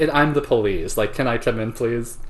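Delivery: ordinary delivery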